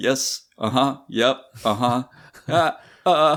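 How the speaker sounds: nervous, quivering, high-pitched mumble. Retelling own answers in a job interview, imitating a nervous quivering voice. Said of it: "probably quiver in my voice".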